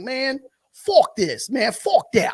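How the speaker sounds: very slow, drawn-out New Yorker voice. Saying he'll start talking like the New Yorkers: imitating New Yorkers. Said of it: "The New Yorkers, they be like".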